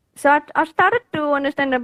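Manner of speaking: English with Indian accent.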